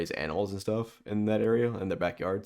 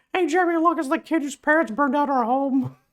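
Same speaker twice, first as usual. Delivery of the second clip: shrill, squeaky cartoon kid voice, very high, loud; 9 dB louder than usual. Calling out to Jimmy about a kid, in a Carl Wheezer voice. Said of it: "Why why is this kid Mickey Mouse?".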